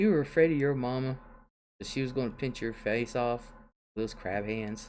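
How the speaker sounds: ordinary talk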